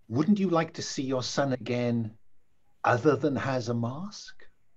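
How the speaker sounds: put-on cultured, refined, upper-class posh English accent. Voicing a mummy-like figure making an offer: cultured english accent. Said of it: "he speaks with a cultured English accent".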